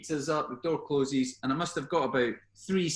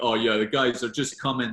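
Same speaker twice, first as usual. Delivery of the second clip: put-on deepest voice, raised; 4 semitones lower, 5 dB louder than usual. Retelling answering a chief super asking where the rest are, in deepest voice. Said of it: "in my deepest voice".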